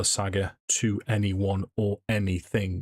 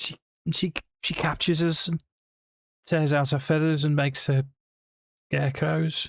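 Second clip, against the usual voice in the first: put-on light touch of Liverpool accent, pitched up; 8 semitones higher than usual. Freed captive explains to the rescuers why they were caged, mild scouse accent. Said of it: "he will have a mildly Scouse accent".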